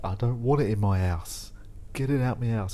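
cross, angry, fatherly scolding voice. Talking about juice pulp in the house: angry dad voice. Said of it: "I sound like an angry dad".

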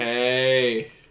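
flat, expressionless, deadpan monotone. Imagining a millennial banshee's cry, demonstrating it: flat monotone. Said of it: "In that monotone".

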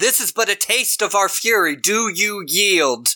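mild, half-shouted yell with a challenging tone. Game master as the king penguin, challenging the players, shouting. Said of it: "she shouts at you".

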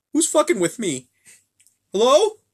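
scared, frightened calling out, very high and swooping. Retelling what a scared man called out, imitating a frightened man. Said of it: "You can hear the fear in his voice".

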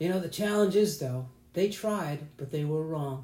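bad Southern accent, preacher voice from the pulpit. Mocking a simplistic pastoral interpretation, Southern bad-pastor accent. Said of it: "I like how your Southern accent comes out".

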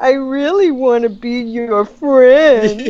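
slow sarcastic drawl. Explaining how people read her, the speaker imitates sarcastic guy. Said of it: "And it's like sarcastic guy".

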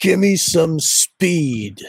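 high, yelled, demanding tone. Telling of a man on the ground at a gas station who yells at them: imitating someone yelling. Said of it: "he looks up at me and he yells".

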